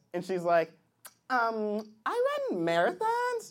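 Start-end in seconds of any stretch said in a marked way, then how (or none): 1.3-3.5 put-on voice, higher and quieter.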